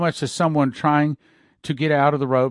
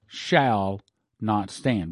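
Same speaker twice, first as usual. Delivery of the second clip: 'shall not stand' stressed, lower pitch; 5 semitones lower, 3 dB quieter than usual. Retelling a man's words from a dream, stress on 'shall not stand'. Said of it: "with the emphasis on the word shall not stand".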